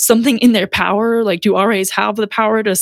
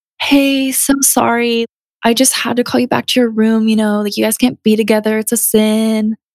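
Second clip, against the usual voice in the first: mock, falsely sweet politeness, sin drawn out. Retelling how Tessa's RA spoke to her at the dorm, fake nice voice. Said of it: "doing that like fake nice voice".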